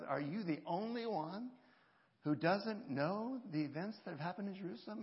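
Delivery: laced with sarcasm, pretty sarcastic. Retelling a traveller's question to a stranger: imitating Cleopas being sarcastic. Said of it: "is pretty sarcastic and says".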